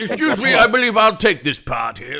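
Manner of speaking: loud, very high voice. Imagining the actor Nigel Bruce showing up to claim a part: Nigel Bruce impression. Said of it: "Nigel Bruce is like".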